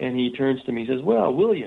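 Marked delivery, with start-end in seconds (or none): 1.0-1.7 put-on nice Southern accent, words drawled out. Retelling a first greeting from a man met at a hotel: Southern drawl. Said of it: "in that nice Southern drawl accent".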